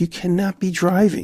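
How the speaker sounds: high-pitched exasperated scolding tone.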